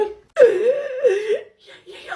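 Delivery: laughing while talking. Answering someone who asks if they're okay: laughing while talking. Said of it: "I can't stop laughing".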